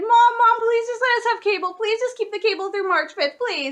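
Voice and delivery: loud, high, begging and pleading voice. Retelling begging a parent to keep the cable: imitating own begging. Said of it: "I begged and I pleaded".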